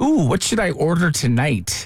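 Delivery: ordinary delivery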